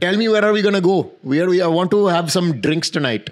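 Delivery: put-on Indian accent. Retelling how he spoke to people after a trip: imitating own past indian accent. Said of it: "ginamit ko yung Indian accent".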